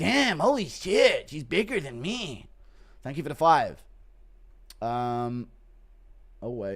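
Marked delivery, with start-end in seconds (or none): 0.0-2.5 high, slow, drawn-out, stunned voice. Introducing a requested bit, the speaker does a Bobby Green impression. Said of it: "Impression of Bobby Green".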